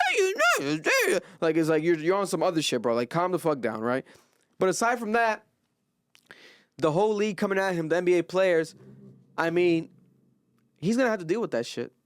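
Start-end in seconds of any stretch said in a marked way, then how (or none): 0.0-1.2 very high-pitched, geeky, nerdy delivery. Mocking a track star's words: imitating a nerdy exclamation. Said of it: "type of nerd no one wants to be".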